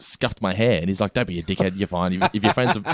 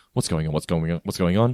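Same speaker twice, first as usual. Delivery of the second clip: put-on panicked voice; 3 semitones lower than usual. Retelling how bikers burst in: retelling own panicked words. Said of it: "And I'm just like".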